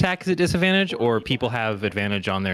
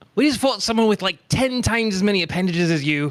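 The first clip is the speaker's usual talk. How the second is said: high taunting shout with slight reverb; 9 semitones higher, 4 dB louder than usual. A game narrator voices a character who trips, recovers, then shouts: in-character shout. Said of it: "just shouts out with like a".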